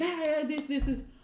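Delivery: heated, irritated, angry, high-pitched tone. Retelling a complaint to a lecturer about marks: imitating own angry words. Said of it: "obviously I'm angry".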